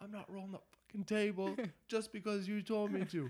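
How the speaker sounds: very loud, very high-pitched shouted yell. Retelling yelling back across the shop: imitating own past yell. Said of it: "And I literally yell".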